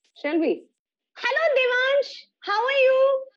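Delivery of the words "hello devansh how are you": very high, loud, shrill voice. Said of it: "in a loud and a shrill voice".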